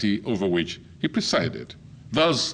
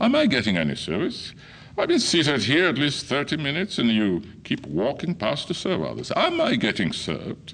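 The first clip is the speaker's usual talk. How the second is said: put-on British accent with swooping, sing-song tune; 4 semitones higher than usual. Retelling asking a server about being served: put-on british accent. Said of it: "putting on my best British accent".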